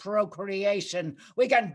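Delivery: ordinary delivery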